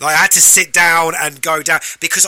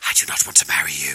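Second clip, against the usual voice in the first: hushed, soft, breathy whisper; 7 dB quieter than usual. Describing a quiet movie scene, acting out the line, imitating Anne Hathaway whispering. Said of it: "she's whispering to Robert Pattinson going".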